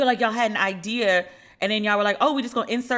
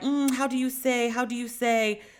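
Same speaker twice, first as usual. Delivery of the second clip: fake, put-on Spanish accent; 2 semitones higher than usual. Imitating someone who fakes a Spanish accent: imitating a fake Spanish accent. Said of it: "she has a whole accent and will be like".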